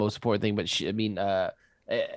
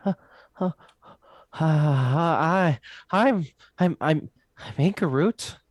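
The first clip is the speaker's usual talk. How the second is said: high, shy, timid faltering stammer with drawn-out hi; 8 semitones higher, 7 dB louder than usual. Voicing a character who timidly introduces herself: timid character voice. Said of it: "she looks at you, um, like, timidly".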